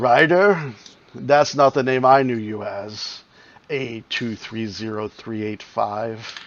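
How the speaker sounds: deep, cracking, rasping crackly voice. Narrating a scene, voicing a figure the listeners hear through a door, deep, rasping, crackling voice. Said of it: "a crackling or a cracking, deep, rasping voice say".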